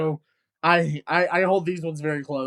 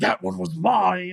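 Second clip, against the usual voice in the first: creepy horror-villain voice with raised pitch; 2 semitones higher than usual. Retelling a horror-movie kill scene, quoting the killer in a Freddy voice. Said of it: "That's a good Freddy voice there".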